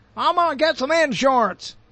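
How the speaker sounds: Southern American accent on "insurance". Showing how the word varies by region, speaker uses a southern accent. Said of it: "I said that as if only a southerner or a midwesterner says insurance".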